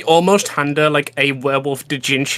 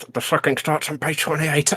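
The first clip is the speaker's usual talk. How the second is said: muttered under the breath, quieter; 6 dB quieter than usual. Voicing a character answering a reading request: muttered under the breath. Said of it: "under my breath".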